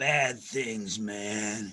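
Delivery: chilling, unhinged, crazed voice. Retelling a commercial line, imitating Dennis Hopper playing a crazy guy. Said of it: "he was playing a crazy guy".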